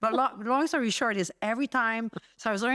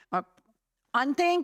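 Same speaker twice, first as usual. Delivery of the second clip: hunting with h dropped, pitched up; 6 semitones higher than usual. Retelling chatting up hunters years ago: imitating own past H-dropping. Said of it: "'cause I didn't say H's back then".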